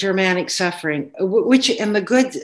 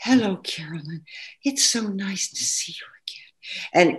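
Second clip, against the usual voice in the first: very soft, quiet, inward, soft-spoken voice; 4 dB quieter than usual. Recalling how Pina used to talk, greeting someone, in a soft-spoken Pina impression. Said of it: "Pina would talk like this".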